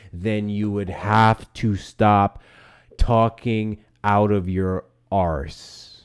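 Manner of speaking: very slow, over-patient. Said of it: "say it real nice and slow".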